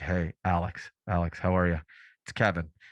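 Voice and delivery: quiet, low whisper. Retelling a buddy's phone call from an open house: imitating a friend half-whispering. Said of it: "And he's he's whispering".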